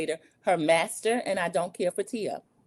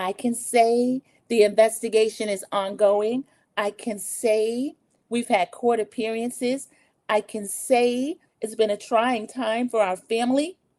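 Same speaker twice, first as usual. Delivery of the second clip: pitched-up, innocent-sounding voice; 5 semitones higher than usual. Retell Doctor Wendy answering a question about her husband's felony charges, imitating Doctor Wendy's innocent voice. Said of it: "Doctor Wendy had on her innocent voice".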